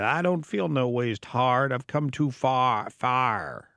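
put-on, slow, drawling Southern American accent. Quoting a woman who suddenly broke into her Southern accent. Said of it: "when she broke into her southern accent".

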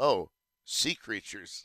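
mock, put-on deadpan delivery. Speaker acts out how she says it to him, imitating her deadpan delivery. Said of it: "humor that is very deadpan".

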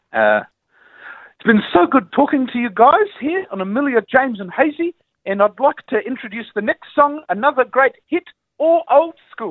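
thick, laid-on New Zealand accent. A radio host, asked by co-hosts, wraps up the segment: heavy new zealand accent. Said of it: "talk in a heavy New Zealand accent".

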